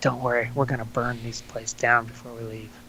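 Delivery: very quiet, barely voiced, hushed, reassuring whisper. Voicing Leopold reassuring a companion before leaving: whispering in character. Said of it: "puts his hand on Lucas's shoulder and whispers to him".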